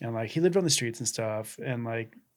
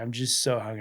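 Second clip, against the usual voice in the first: put-on defeated, tearful voice. Retelling what a hungry man caught with a sandwich said: imitating a defeated, tearful voice. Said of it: "he's so defeated".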